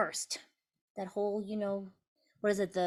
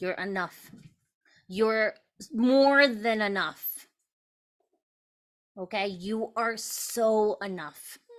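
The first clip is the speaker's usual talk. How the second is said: loud, emotional tone full of feeling; 6 dB louder than usual. Sharing an encouraging message with a group tonight, getting emotional. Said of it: "I'm getting emotional".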